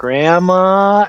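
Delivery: put-on high, small little child voice. Retelling a childhood bit, calling out to grandma in own seven-year-old child voice. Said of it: "my bug like child voice at age seven".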